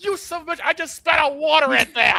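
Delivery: acted, very high-pitched, loud yell. Retelling how Shane reacted while drinking water: imitating Shane yelling. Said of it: "he yells".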